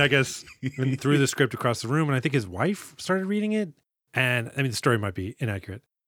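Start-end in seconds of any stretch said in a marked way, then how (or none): none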